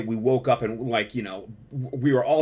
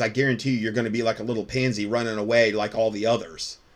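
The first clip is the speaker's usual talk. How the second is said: ordinary talk, nothing marked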